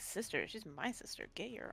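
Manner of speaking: hushed, whispered mutter under the breath. Playing Lily, muttering to herself right after being thanked: muttering under breath. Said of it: "Under her breath".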